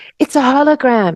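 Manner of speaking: whispered voice. Speaker recalling a little voice in their head amid the yelling, retelling a whisper. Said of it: "this little voice whispered to me".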